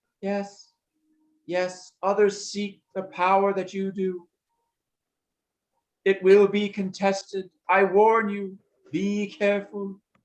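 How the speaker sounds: squeaky, high-pitched voice. After the first voice gives its warning, the second speaks up in the high-pitched voice. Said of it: "Then the high pitched voice says".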